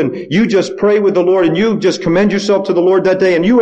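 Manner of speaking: normal talking voice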